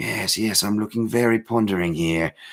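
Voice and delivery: terrible, put-on British accent. Mocking an actor's pondering scene in a show, in a put-on british accent. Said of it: "not trying to do a terrible accent to offend my brothers across the pond".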